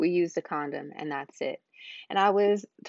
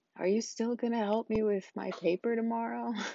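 acted, drowsy, half-asleep voice; 4 semitones higher, 5 dB quieter than usual. Retelling the question a man asked sleepily as the speaker left, imitating a sleepy voice.

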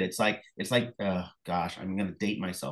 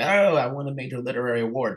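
shrieking, screaming at full volume; 2 semitones higher, 4 dB louder than usual. Retelling waking the kids after winning an award: imitating screaming. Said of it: "you wake up the kids screaming like".

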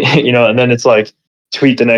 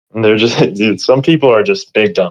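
normal talking voice

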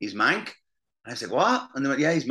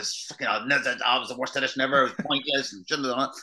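put-on grumpy, foul-mood voice. Retelling complaining to his wife after an audition: imitating own foul mood. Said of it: "was in a foul mood with my, with my wife".

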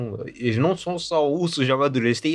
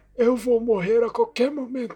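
put-on very high, wise old wizard voice; 10 semitones higher than usual. Discussing a character, the speaker imitates how he talks: imitating the character's voice. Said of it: "Ele fala assim, meio".

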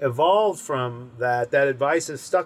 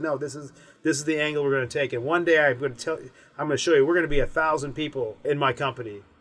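plain

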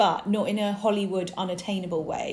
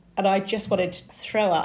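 ordinary talk

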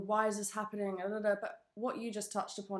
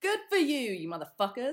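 loud, swooping, joking mock bitter, resentful tone; 3 semitones higher, 6 dB louder than usual. Cursing at friends who fled somewhere warm: mock bitter tone.

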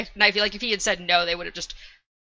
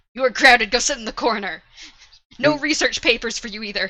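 acted-out parental scolding voice; 3 semitones higher, 3 dB louder than usual. Acting out a book character punishing another: scolding him like a child. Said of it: "It just treats him like a child".

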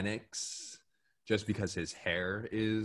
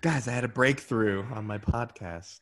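raised, announcing-to-everyone voice; 3 semitones higher, 6 dB louder than usual. Joking about posting a podcast breakthrough online: Facebook voice. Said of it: "Facebook voice is terrible".

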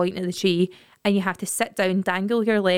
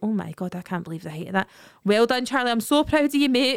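mock-worried speech; 3 semitones higher than usual. Quoting what an onlooker said while watching the speaker's child, mock-worried retelling. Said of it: "he's obviously worried".

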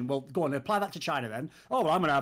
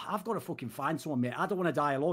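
ordinary talk

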